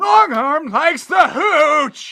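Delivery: very high, very loud, high-pitched yelling holler. A game master voicing a character pointing at another character, yelling. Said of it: "And he yells".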